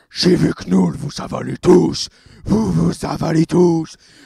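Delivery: huge, very loud, booming rough voice. Retelling what a film character says to the others, big heavy voice. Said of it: "dit avec sa grosse voix".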